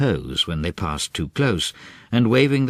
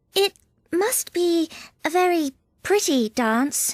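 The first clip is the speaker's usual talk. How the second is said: timid, shy, very high-pitched and slow. Alice speaks to the two creatures who sat down sadly, timid. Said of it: "said Alice timidly".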